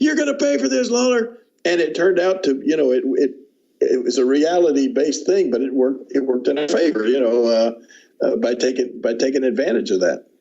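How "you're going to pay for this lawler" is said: acted, very high, shrill screeching yell. Retelling a man's threat as cops take him out: imitating someone screaming. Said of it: "he's screaming".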